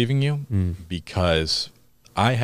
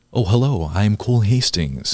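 charismatic, pumped-up, high-energy presenter voice; 3 semitones higher, 4 dB louder than usual. Showing how they talk in their own YouTube videos, a high-energy YouTube voice. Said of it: "I'm trying to do this with my voice".

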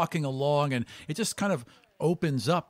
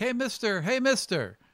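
put-on eager, high-pitched kid voice, street-vendor calling style; 9 semitones higher than usual. Voicing kids who run up offering wooden beads: kids calling out to sell. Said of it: "Kids come running up with handfuls of wooden beads and is like".

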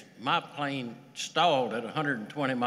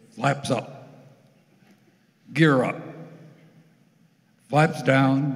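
mock authoritative commanding tone, louder; 8 dB louder than usual. Describing co-pilots, the speaker acts out their callouts, mimicking an authoritative voice. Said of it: "In a very authoritative voice".

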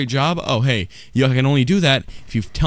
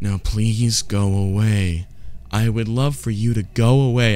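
courteous, polite indoor-voice tone; 4 semitones lower than usual. Speaking to someone on stage in a quiet voice. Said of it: "I'm talking to you in my quiet voice".

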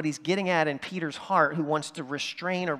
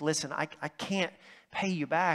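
mock pleading, quieter and slower; 3 dB quieter than usual. Retelling a story, speaker voices the debtor dropping to his knees, acting out begging. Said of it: "he just begs".

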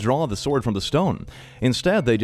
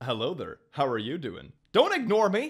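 playful, teasing, put-on flirtatious tone; 3 semitones higher, 6 dB quieter than usual. Showing how to flirt with demons: mock flirting. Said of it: "I can flirt with demons too".

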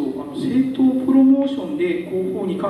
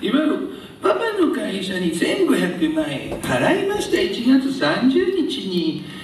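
spiteful, malicious, taunting put-on voice. Quote someone's statement about a payment, as a malicious mocking impression. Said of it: "このモノマネもものすごい悪意がありますね".

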